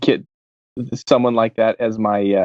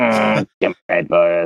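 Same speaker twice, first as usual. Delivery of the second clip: put-on electrolarynx voice, lower; 4 semitones lower than usual. Quoting a cartoon line after a partner names the character: Ned from South Park voice. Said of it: "Ned from South Park".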